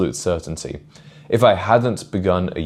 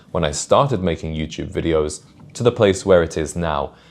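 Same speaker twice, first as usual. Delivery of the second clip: normal talking voice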